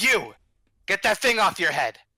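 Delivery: loud, rough, gruff officer voice. A game master voices an unseen figure confronting the players: gruff voice. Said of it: "you hear a gruff voice".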